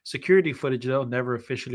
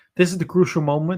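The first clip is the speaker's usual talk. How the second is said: ordinary delivery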